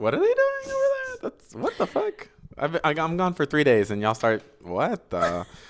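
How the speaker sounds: high, swooping, halting rant with swinging pitch. Doing Jesus back from the dead three days later: Jesus impression. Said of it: "my impression of Jesus three days after the rock".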